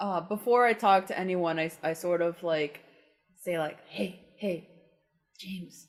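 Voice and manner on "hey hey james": hushed, muttered just under the breath. Voicing a character trying to catch james's attention: under my breath. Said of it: "under my breath".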